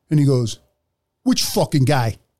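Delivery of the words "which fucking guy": put-on big, heavy, thick Italian accent. Retelling an arrest, the speaker quotes a man in a thick Italian accent. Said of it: "he's got this big, thick Italian accent".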